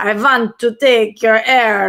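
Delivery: put-on vampire voice. Streamer talking to chat, doing a Count Dracula voice. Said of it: "I'm kind of like Count Dracula".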